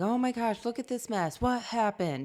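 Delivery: wild, high-pitched, crazed screaming. Speaker retelling screaming about a mess around the kids, re-enacting her screaming. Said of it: "I'm screaming about something like".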